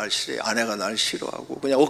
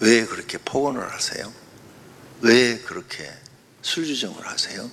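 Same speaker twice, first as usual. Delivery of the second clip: speaking in a lowered, brought-down voice. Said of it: "이렇게 목소리를 낮춰서 얘기해라".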